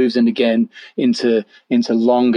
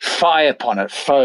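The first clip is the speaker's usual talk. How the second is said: words spat out in disgust; 3 semitones higher than usual. Reading a Hamlet line aloud to show disgust: spitting out the words. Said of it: "almost spitting out his own fluency".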